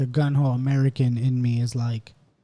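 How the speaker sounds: ordinary talk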